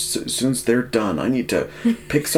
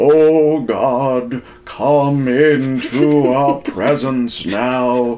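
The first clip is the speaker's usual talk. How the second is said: grand, raised orator preacher voice; 2 semitones higher, 6 dB louder than usual. Imitating an elder who starts the sunday prayer behind the lectern; mimicking grand orator prayer voice. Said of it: "put on this great order voice".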